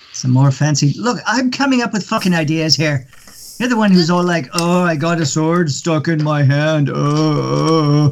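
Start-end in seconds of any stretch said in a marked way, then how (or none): 4.5-8.1 very slow, drawn-out teasing with "oh" stretched long. Talking to someone about their own ideas, do an impression of the person addressed. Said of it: "that's my impression of you".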